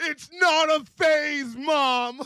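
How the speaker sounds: very high, top-of-lungs shrieking scream. Speaker acts out an emo friend yelling at his mom: retelling a top-of-lungs scream. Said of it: "at the top of his lungs".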